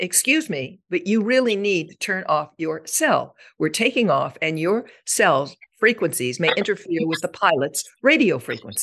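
formal, courtroom trial consultant manner. On a plane taking off, telling a young man to turn off his cell, loud trial consultant voice.

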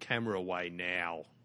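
put-on gruff voice. Pretending to be a ranger to people with their backs turned: put-on gruff voice. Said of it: "I just put on a gruff voice".

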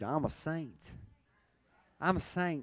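sassy, soft voice with attitude. Urging listeners to repeat after him and say it: with a little attitude. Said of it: "Say it with a little attitude".

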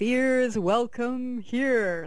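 big, juicy, full, rich voice. Recounting what the stillness said to them, in a big juicy voice. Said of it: "in this big juicy voice, ... like that".

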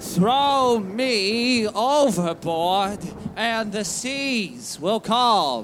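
very slow, deliberate, each word separate, "me" drawn out. Told to speak up, the boy repeats his plea, louder, speaking up. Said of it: "Little louder, boy. Speak up".

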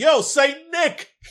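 shrill, very loud, high-pitched holler. Picturing pushing through a crowd, the speaker calls out to Santa. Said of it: "I'm just calling out".

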